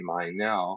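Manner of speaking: normal talking voice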